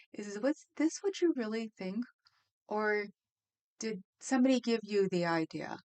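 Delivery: patronizing, superior, condescending talking-down tone. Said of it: "sounded like he was condescending".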